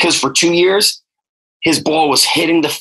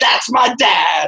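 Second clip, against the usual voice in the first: put-on excited, fired-up child screaming; 4 semitones higher than usual. Retelling a seven-year-old watching his dad deadlift: imitating a kid screaming.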